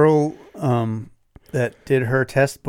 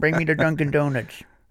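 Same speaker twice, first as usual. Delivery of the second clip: put-on cranky, crotchety old man voice; 2 semitones higher, 3 dB quieter than usual. Acting out a cranky old passenger in a driving test: crotchety old man voice. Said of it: "crotchety old man".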